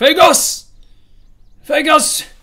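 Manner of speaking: anxious, very high, very loud nervous shout. A game master voices a character calling out on entering a clearing: nervous shout. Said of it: "You can see that he is nervous".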